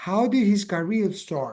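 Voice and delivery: pitch falls at the end on start. Intonation lesson, repeat the question with falling intonation on start. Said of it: "La entonación es para abajo al final".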